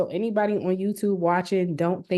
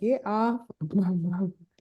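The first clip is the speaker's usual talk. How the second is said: put-on voice of a little boy; 3 dB quieter than usual. Retelling what the little boy said: imitating a little boy. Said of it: "That little boy said".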